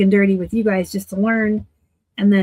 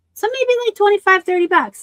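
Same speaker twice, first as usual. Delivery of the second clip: excited voice leaping very high in pitch; 12 semitones higher, 4 dB louder than usual. Pricing a pair of pants to sell online, in a high-pitched excited voice. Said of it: "My voice got high again".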